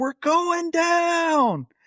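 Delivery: mock very high panicked shriek, falling and stretched out. Retelling a contractor panicking on a steam-filled plane: imitating a scream. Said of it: "she screams".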